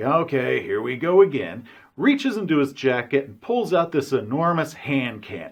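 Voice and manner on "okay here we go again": play-acted, slow, drawn out on a heavy deep sigh. Recounting a game session, acting out the agent's reaction, imitating a deep sigh. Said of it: "he just kind of gives this deep sigh".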